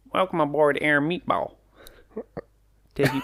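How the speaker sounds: goofy talking-meatball voice. Speaker finally manages the meatball impression he was attempting: silly talking meatball voice. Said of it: "I'm trying to do a meatball impression".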